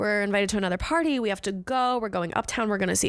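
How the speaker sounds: ordinary talk, nothing marked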